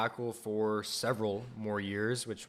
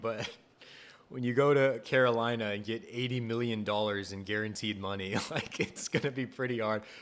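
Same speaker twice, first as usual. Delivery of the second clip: laughing mid-sentence, talking through laughter. Reporting team news to listeners, apologizing for laughing: laughing while talking. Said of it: "I'm sorry, I'm laughing".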